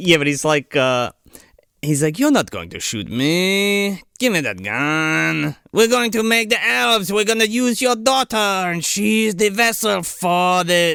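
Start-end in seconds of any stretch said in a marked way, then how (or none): 2.2-11.0 put-on French villain accent, pitched up, stretched me. Retelling the villain taking a gun from a man, French-accented Nazi villain voice. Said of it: "That's what he sounds like".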